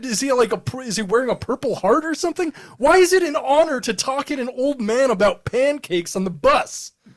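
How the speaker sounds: incredulous laughing rant, high-pitched and loud.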